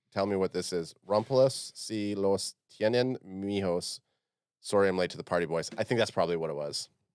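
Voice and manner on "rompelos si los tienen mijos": Spanish-accented pronunciation. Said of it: "that accent, wow, you got it down pat".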